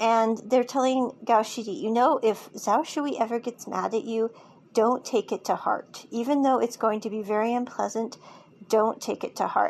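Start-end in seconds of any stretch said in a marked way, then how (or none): none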